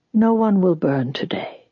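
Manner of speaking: ordinary delivery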